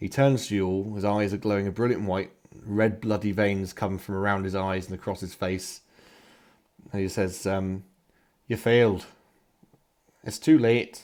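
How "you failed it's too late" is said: put-on raised voice slipping accidentally into a Scottish accent. Voicing an angel who turns to the party: accidental Scottish accent. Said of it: "Suddenly Scottish".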